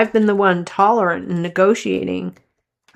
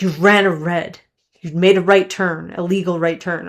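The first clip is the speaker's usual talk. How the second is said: mock-furious, acted angry tone. Retelling what an angry man said to her, retelling a fuming man. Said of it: "He was like fuming".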